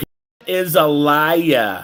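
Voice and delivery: put-on heavy Brooklyn accent, very slow, "liar" drawn out. Impersonating an interviewee: impersonating Lydia, thick Brooklyn accent. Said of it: "I can do my impersonation right now of Lydia, who has a thick Brooklyn accent".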